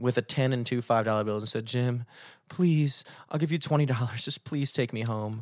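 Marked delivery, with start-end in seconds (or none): 1.7-5.4 mock bawling, sobbing through tears, desperate. Retelling a woman who walked up crying with cash, imitating someone bawling, pleading. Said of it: "she's crying bawling crying".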